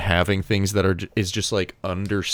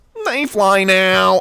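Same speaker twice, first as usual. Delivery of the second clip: very high, loud, taunting, mocking voice; 12 semitones higher, 7 dB louder than usual. Retelling a line from an interview with Oscar Isaac: imitating Oscar Isaac's mocking voice. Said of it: "in, like, a mocking voice".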